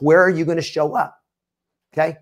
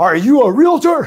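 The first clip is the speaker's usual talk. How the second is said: big, high, loud, angry yell. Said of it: "he just let out this big yell".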